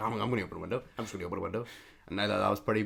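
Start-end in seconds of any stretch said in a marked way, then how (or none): 0.0-1.7 repeated half to herself, muttered. Retelling how a sweating woman, with nobody around her, asked to open a window: imitating a woman talking to herself. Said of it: "And she's like".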